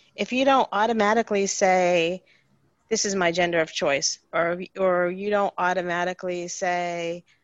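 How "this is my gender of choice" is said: ordinary talk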